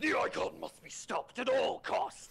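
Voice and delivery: rough, creaky elite alien voice. Showing how others wanted an Elite voiced: Elite alien voice. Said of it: "they wanted me to go".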